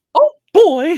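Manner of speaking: very high, loud squeak. Asked whether they can do Mickey Mouse, a speaker tries a Mickey Mouse voice. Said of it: "I could do a little Mickey Mouse".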